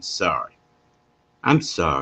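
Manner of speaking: "sorry" slow, drawn-out, rolled off the tongue. Showing listeners how to say the word, letting "sorry" roll off the tongue. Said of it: "Let it roll off your tongue".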